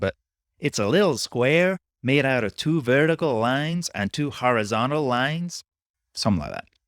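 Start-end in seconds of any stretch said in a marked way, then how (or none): 0.6-5.6 slightly higher put-on American accent. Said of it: "this attempt at an American accent".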